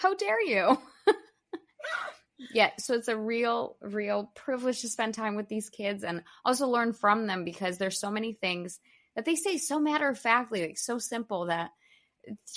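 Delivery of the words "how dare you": put-on higher indignant child voice. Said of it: "he's like".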